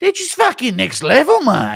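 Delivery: very high, loud, swooping put-on Australian accent. Impression of an aussie guy gushing over two people, put-on australian accent. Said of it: "Impression of an Aussie guy".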